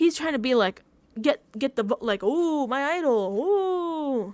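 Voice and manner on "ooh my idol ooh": mock loud, showy, very slow drawn-out ooh. Imitating Rizzo showing off his idol: loud imitation of Rizzo. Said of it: "That was loud".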